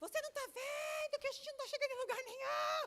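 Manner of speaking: high, shouting voice. Lost while driving with several GPS voices, imitating mother yelling. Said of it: "minha mãe começou a gritar".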